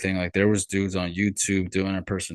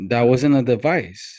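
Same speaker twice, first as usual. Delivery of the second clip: usual speaking voice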